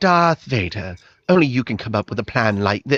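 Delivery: put-on English accent, wobbly, wavering, pitched low. Mocking an actress's attempt at an accent in a film scene: imitating Carrie Fisher's English accent. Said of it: "a sort of English accent right there? She's like".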